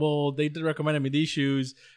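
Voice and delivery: ordinary talk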